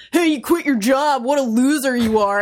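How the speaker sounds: dumb, obnoxious, taunting dude-bro voice. Imitating the talking baby monster from the game: obnoxious, stupid voice. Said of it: "the most obnoxious, stupid voice".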